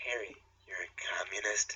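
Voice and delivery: quiet, soft voice. Reading a fan-fiction line aloud, a character's question in a quiet voice. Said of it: "Asked Hermione in a quiet voice".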